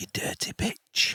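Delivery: hushed whisper. In a tabletop game, the speaker's character attacks her, whispering into her ear. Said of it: "I'm whispering into her ear".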